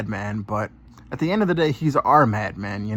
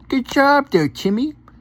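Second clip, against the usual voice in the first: put-on very high childish baby talk; 13 semitones higher, 3 dB louder than usual. Praising Timmy for answering the questions correctly: baby voice. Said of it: "let me put on my baby voice".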